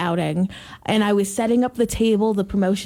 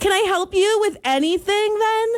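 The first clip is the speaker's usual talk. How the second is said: put-on condescending shop voice, pitched up high; 12 semitones higher than usual. Retelling offering help to a woman who kept refusing, in a put-on condescending tone. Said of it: "condescending tone where my voice goes up like a smidge".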